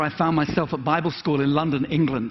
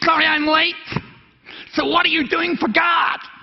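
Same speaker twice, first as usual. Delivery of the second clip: put-on New York accent, very high pitch; 13 semitones higher, 4 dB louder than usual. Retelling what a preacher said walking down the aisle, in a New Yorker accent. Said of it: "New Yorker accent".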